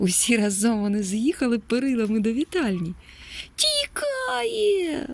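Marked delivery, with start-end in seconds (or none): 3.6-5.1 shrill, very high, stretched-out drawn yell. A character spotting the grey bandit cries out to the chasing puppies, shouting. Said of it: "закричав Печ".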